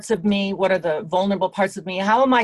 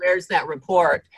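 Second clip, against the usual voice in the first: ordinary talk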